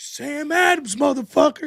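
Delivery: loud, high-pitched, acted-out yell. Retelling a Chappelle Show beer sketch: imitating Bill Burr yelling. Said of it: "Why are you yelling at me?".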